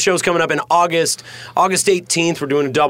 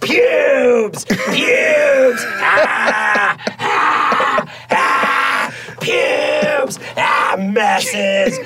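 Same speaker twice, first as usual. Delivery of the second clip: put-on wailing. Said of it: "this was my impression of how Sarah sees me".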